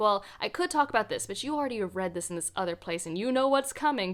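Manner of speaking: ordinary delivery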